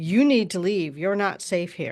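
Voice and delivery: put-on big booming voice. Retelling a voice heard on a forestry road, imitating a big booming voice. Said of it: "like a big booming voice".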